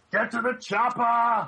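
very high, punchy shout like a movie muscleman. Quoting a line from a favourite sci-fi movie: Arnold Schwarzenegger impression. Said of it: "And a great Arnold impression".

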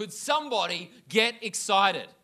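loud disgusted outburst. Retelling how a man stood up mid-service and spoke: retelling a loud outburst. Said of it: "loud voice".

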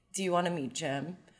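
play-acted dead-calm, soft, even monotone. Retelling a surprise phone call from Jed: imitating Jed's very calm voice. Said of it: "in this very like calm voice".

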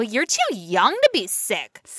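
put-on disdainful, accusatory reproach with swooping sing-song tone. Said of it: "such an accusing tone".

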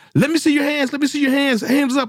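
shouting. A police officer retells confronting a silhouetted person, retelling yelled commands. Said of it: "I'm just yelling commands".

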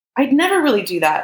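desperate, pleading, high-pitched voice. Confronted by an angry woman, he protests, desperate, his voice high. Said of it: "desperation making his voice high".

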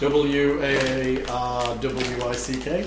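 slow, soft, spelled out letter by letter.

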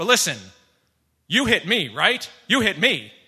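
aggressive, loud, pushy, in-your-face. Retelling a pizza delivery driver's words: imitating an aggressive driver. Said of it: "being kind of aggressive with me".

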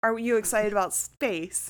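ordinary talk

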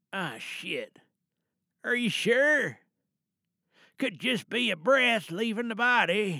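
put-on elderly grandfather character voice. Performer mid-monologue, talking to a caller on the phone, Grampy character voice. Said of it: "so we're going to be doing Grampy this evening for tonight's monologue".

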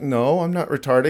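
ordinary delivery

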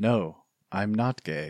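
very slow, deliberate, drawn-out delivery. Retelling a film scene, imitating a character's delivery. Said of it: "he says it like this. He goes, in this delivery".

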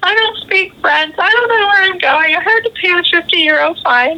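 put-on, very high, blubbering, crying through the words. An American retells talking to a woman on the metro, imitating blubbering. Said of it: "And I'm blubbering".

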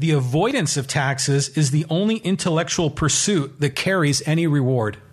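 ordinary talk

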